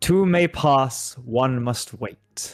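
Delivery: loud voice booming out. Game master voicing a voice that rings out in Infernal: booming voice. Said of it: "a booming voice rings out".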